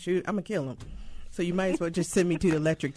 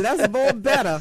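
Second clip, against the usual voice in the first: put-on grandmother voice; 5 semitones higher, 8 dB louder than usual. On the radio, the speaker repeats a phrase imitating their grandmother. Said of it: "Let me say it like my grandmother".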